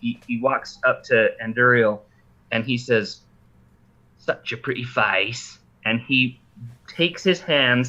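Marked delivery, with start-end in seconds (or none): 4.2-5.6 mocking, grinning chuckle, quieter. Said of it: "kinda chuckles as he's doing this".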